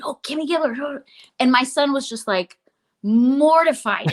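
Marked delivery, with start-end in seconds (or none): 0.0-1.0 put-on whispering child voice. Retelling middle schoolers spotting someone in a coffee shop: imitating kids whispering.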